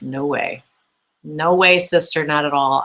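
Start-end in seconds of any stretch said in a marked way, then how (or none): none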